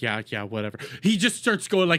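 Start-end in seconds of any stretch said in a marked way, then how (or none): 0.0-0.8 put-on dismissive chatbot voice, lower and quieter. Mocking a chatbot's careless answers: dismissive Grok impression. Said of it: "Grok's just like".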